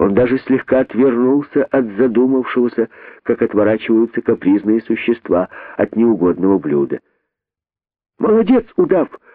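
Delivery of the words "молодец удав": delighted cry, very high pitch. A character calls out to a boa, delighted. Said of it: "обрадовался возжаждавший".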